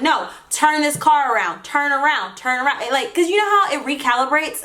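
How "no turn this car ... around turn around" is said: normal talking voice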